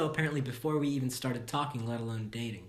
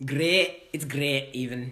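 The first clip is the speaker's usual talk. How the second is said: bad put-on Scottish accent; 5 dB louder than usual. Introducing the final scenario, a podcast host slips into a bad Scottish accent. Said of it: "really bad accent".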